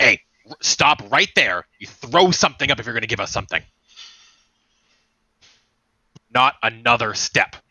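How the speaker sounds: abrupt, concerned, snapped delivery. Voicing Garrow as he stops someone at the bottom of the stairs; Garrow snapping abruptly. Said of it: "Garrow snaps at you abruptly, like concerned abruptly".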